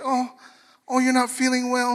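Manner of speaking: sweetly caring, tender, doting, sympathetic cooing. Retelling how his wife talks when he is sick: imitating wife's softened voice. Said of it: "her voice changes".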